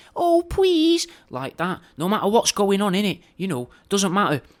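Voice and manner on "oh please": put-on, very high, loud little girl voice. Demonstrating saying please and thank you in a young girl voice. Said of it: "pronounce it all like a young prepubescent girl".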